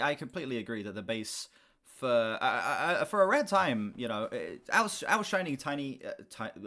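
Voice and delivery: stuttering, stammering speech. Agreeing that the bass outshines the guitar, stuttering. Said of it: "My stuttering is just at the top of its game today".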